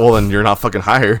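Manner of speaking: ordinary talk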